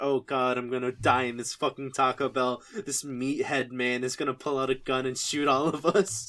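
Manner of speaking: ordinary talk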